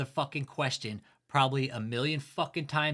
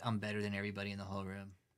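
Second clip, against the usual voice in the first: smug, self-satisfied, superior, boastful tone; 5 semitones lower, 9 dB quieter than usual. Mocking a smirking man on video: imitating a smug man. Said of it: "sitting here smirking like he's fucking smarter".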